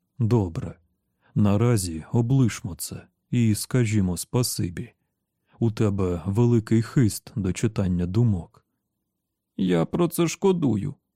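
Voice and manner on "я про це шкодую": high-pitched, sudden, unbidden blurt. [name], just praised for his mind-reading gift, blurted out. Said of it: "вирвалося в Джейка".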